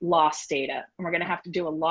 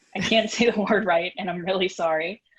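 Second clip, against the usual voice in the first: ordinary talk, nothing marked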